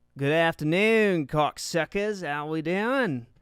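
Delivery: fake Australian accent. Greeting viewers before a recap, in a put-on australian accent. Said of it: "I've done the, uh, the Aussie accent".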